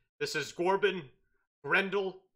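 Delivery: bugbear monster voice. Voicing a bugbear blocking a party in the forest: bugbear voice. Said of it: "he says".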